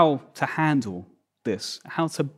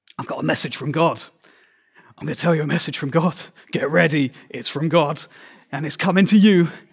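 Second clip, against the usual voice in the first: frenetic, frantic, intense, urgent, much faster. Demonstrating how a prophetic message can come across, frenetic urgent delivery. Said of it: "frenetic delivery".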